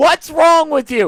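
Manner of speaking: put-on woman's yell. Retelling a news story, quoting an older woman: imitating a woman yelling. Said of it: "she started yelling at him".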